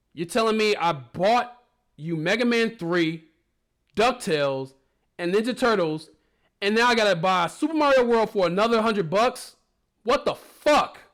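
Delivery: loud, shrill, fed-up angry-parent rant. Comedic retelling of what parents said back then, in a mock-angry parent voice. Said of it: "here's my angry parent voice".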